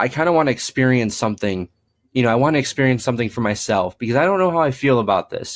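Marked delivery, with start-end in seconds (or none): none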